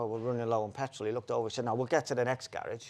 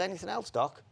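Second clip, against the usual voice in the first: mocking, sarcastic, pitched-up jab; 7 semitones higher than usual. Retelling a remark to someone at the counter: retelling a sarcastic remark. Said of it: "sarcastically I said".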